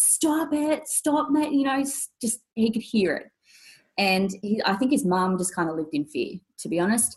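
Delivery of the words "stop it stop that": mock, very high, drawn-out, top-of-the-lungs screaming. Retelling what a little brother shouted in the house: imitating someone screaming. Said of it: "screaming at the top of his lungs".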